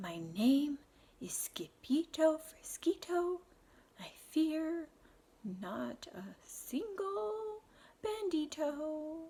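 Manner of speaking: hushed, very quiet, very slow and drawn-out. Facing the bandito, the trembling sword fighter answers in a very soft voice. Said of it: "in a muy, muy soft voice".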